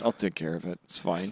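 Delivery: mock flat, low, emotionless, utterly unbothered bored tone. Imitating Marco flying in to end a scene: imitating Marco's bored, emotionless tone. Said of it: "no emotion".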